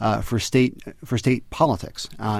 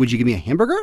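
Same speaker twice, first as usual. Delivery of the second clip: "hamburger" ends on a high rising pitch. Contrasting ways of ordering a hamburger, rising high at the end. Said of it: "the way that it ends on a high note".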